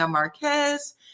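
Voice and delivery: mock screaming, high-pitched. Retelling how Marquez walks in and introduces himself: imitating Marquez screaming. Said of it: "him screaming".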